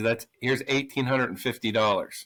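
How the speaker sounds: plain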